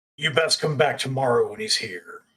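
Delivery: low growling voice. Narrating a horned figure who thrusts his chest out, growling. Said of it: "and he growls".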